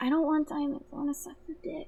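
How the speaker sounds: put-on high, babyish little-girl baby talk. Retelling a film character's line in a wheelchair scene: imitating a baby voice. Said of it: "doing baby voice".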